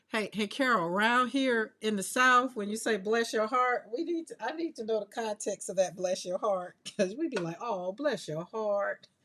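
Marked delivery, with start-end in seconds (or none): 7.6-8.9 sarcastic, mocking, much slower. Explaining to Carol how people in the South say it, sarcastic bless your heart. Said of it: "It is very sarcastic".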